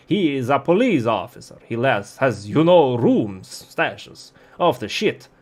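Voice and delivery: put-on Romanian-accented voice. Game master voicing a character describing the police officer Carlos: Romanian accent. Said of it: "let's give him a Romanian accent".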